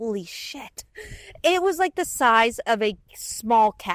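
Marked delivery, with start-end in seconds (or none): 0.0-0.8 breathy, barely voiced soft whisper. Retelling first seeing a huge mule deer: imitating own past whisper. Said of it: "I think I whispered in, like, under my breath".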